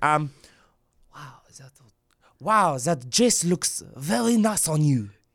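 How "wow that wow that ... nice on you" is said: put-on French accent. Saying a line in a french accent when asked: french accent. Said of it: "in a French accent".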